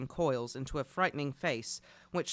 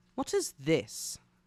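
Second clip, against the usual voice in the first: cold, icy, unwelcoming voice. Reading a story aloud, a woman questioning arrivals: cold voice. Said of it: "said a woman's cold voice".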